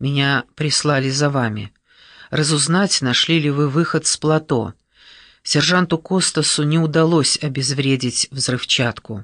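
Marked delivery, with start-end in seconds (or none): none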